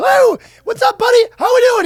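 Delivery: very high, shrill, shouted spirit voice. Imitating the spirits said to live inside a man, in a high-pitched spirit voice. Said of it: "they're all high-pitched".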